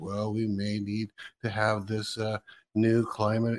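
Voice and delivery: mild, soothing, calm put-on grandfatherly voice. Imitating a politician who acts all calm: imitating a put-on grandfather voice. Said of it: "he puts on this grandfather's voice".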